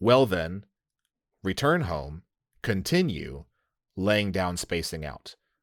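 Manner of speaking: ordinary talk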